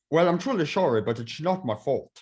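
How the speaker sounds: badly put-on, fake Irish accent. Recording with another speaker, someone tries out an accent: bad Irish accent. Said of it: "That is not even an Irish accent".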